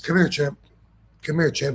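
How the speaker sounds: gentle, mild-mannered, easy tone. Retelling what Abdul the Butcher said to him, imitating soft speech. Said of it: "He speaks really soft".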